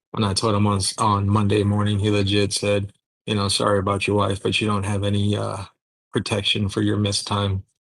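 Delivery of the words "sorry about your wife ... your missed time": ordinary delivery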